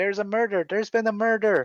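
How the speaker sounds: high, alarmed yelling. Voicing a dwarf shouting news down the street: yelling. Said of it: "yelling down the street".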